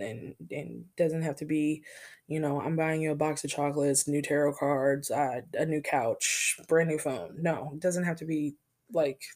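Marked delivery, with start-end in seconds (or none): none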